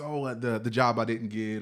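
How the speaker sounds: usual speaking voice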